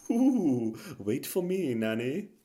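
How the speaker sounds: slow, drawn-out, haunting Victorian ghost voice. Haunting the podcast like a Victorian ghost: Rees-Mogg impression. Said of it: "doing my best Rees-Mogg impression".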